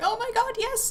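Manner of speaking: high, thrilled, excited squeal.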